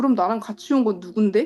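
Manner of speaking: ordinary delivery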